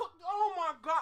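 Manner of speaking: breaking off mid-word, sudden high-pitched outburst. During a conversation, a speaker reacts to the question just asked; yelling. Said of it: "I'm sorry for yelling".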